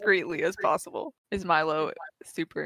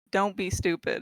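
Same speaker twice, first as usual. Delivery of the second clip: usual speaking voice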